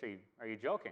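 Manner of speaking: ordinary delivery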